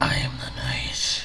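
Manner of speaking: low, whispered, dark brooding hero voice.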